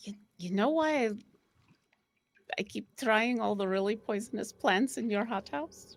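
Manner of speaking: hushed, almost silent, very quiet voice. Voicing a character who sidles up to an uneasy companion, very quiet voice. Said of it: "and v- very very quietly".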